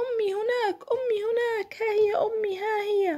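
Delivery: very high, ringing, excited shout. A narrator reads a granddaughter calling out in the park, shouting. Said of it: "فصاحت".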